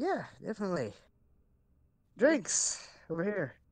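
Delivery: high, swooping, reluctant, unwelcoming, unhappy-sounding. Agreeing in character to have drinks together: not sounding happy. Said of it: "You don't sound, uh, happy about it".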